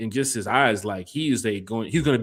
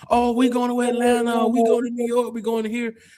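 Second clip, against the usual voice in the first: giddy, eager, very high excited voice, acted; 13 semitones higher than usual. Retelling how players react on draft night: imitating excited drafted players. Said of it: "when the players are drafted".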